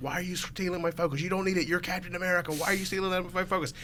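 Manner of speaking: mock furious, angry, high-pitched screaming rant. Retelling a friend raging into the microphone during a game: retelling angry screaming. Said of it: "He was like screaming in the microphone".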